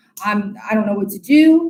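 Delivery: ordinary delivery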